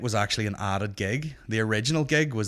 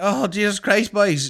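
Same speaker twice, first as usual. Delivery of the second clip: very high, drawn-out, all-panicked cry; 10 semitones higher, 6 dB louder than usual. Retelling how a man running down the street spoke: imitating a panicked man. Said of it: "this dude runs down the street all panicked".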